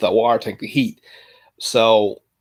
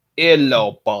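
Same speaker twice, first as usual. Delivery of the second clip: put-on British accent, lower voice. Trying out different accents one after another, attempting a lower British accent. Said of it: "I'll try to do a lower British accent".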